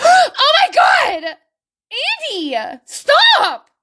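very high, shrill, swooping, very slow shriek. Giving an example of reacting when a brother tells your secret: screaming. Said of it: "sorry for screaming in your ear".

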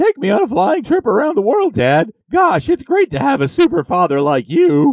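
very high, loud, shrill, obnoxious, grating voice. In a story, Jimmy answers Superman, his dad: obnoxious Jimmy Olsen voice. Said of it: "That was obnoxious and it hurt my ears".

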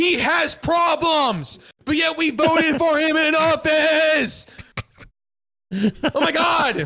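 slow, exasperated shout full of disbelief.

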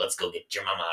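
nasty, creepy voice. Imitating an actor's voiced film creature to a friend: imitating Robert Pattinson's nasty voice. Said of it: "he's got such a nasty voice".

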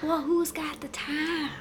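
slow, whispered southern drawl. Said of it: "I went Southern for a second".

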